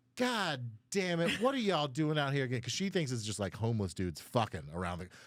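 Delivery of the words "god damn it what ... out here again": put-on upset, fed-up woman's voice, pitched up. Retelling a lady rolling down her cruiser window, imitating an upset woman. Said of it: "So she's very upset".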